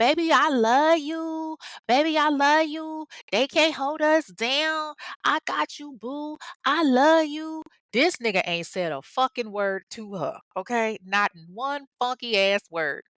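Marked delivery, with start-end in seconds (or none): 0.0-7.6 acted, high, shrill screaming at full tilt. Retelling how a woman screamed at a man who said nothing back, retelling a woman screaming. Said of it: "she's like screaming at him".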